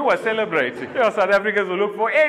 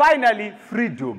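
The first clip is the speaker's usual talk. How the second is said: ordinary talk, nothing marked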